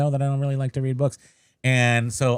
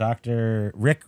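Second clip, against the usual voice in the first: normal talking voice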